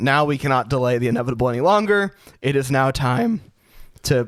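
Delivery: voice breaking and cracking mid-line. A podcast host announcing the next segment, voice cracking. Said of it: "my voice is cracking again".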